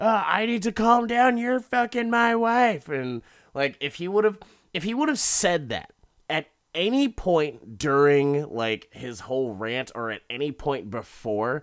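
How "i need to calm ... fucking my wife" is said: mock-yelling put-on voice, much higher pitch. Recounting a scene where Richard yells at a departing car: retelling Richard's yell. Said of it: "he yells at the car as they're leaving".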